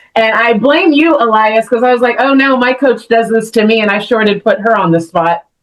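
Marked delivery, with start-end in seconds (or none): none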